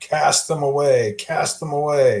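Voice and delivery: shrieked, screamed, shrieking delivery. Voicing a critter in a hayloft pointing at Cornell: screaming. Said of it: "And he's screaming".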